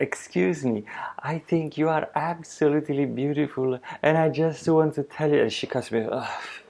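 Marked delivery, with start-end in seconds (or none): 0.0-5.4 put-on insincere fawning tone, pitched up. Retelling walking up to a woman in Malta: imitating his own fake flattering tone. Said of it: "I ran up to that woman being fake".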